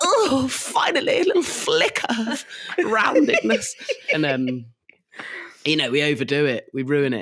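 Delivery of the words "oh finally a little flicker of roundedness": very high fantasy-creature voice, pitched way up. Retelling how the family reacts to the son's request: Gollum voice. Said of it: "we all go full Gollum".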